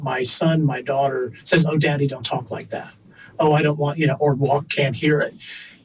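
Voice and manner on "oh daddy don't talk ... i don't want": ordinary delivery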